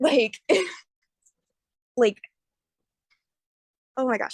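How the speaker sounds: stuttering, tripping over and repeating words. Describing a diagnosis to a listener, stuttering. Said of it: "I'm stuttering".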